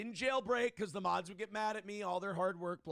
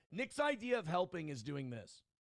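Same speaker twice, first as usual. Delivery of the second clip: plain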